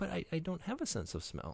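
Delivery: small, weak, timid, soft, high little voice. Retelling being a first grader on the school bus, imitating a meek little weak voice. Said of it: "your meek little weak voice".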